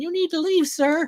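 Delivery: very high, squeaky tough-guy voice. Retelling a bouncer telling him to leave: Mike Tyson voice. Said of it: "with a Mike Tyson voice going".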